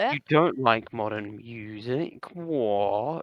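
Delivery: over-obvious, very slow sarcastic voice. Feigning surprise that another speaker dislikes modern music: put-on sarcastic voice. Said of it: "the most obvious sarcastic voice".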